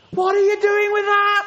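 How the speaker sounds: loud high shout. Describing a voice change, speaker demonstrates a parent: parent shouting at a child. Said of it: "a parent who shouts at a child".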